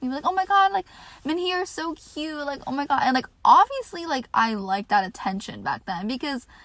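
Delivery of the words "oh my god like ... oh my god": high, fawning, affectionate, gushing, doting voice. Imitating older girls who hugged her in school hallways, imitating girls doting. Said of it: "they would dote on me".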